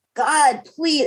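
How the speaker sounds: high, tearful, crying, begging tone. Retelling praying alone in the bedroom at night: reenacting a tearful prayer. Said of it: "And I would just cry and cry".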